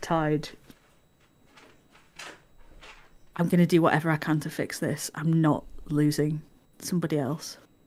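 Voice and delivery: quiet, hushed voice, close to listener. In a role-play, speaker's character leans close to Tide so Endo won't hear, speaking quietly. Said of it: "lean down like very close to you and quietly".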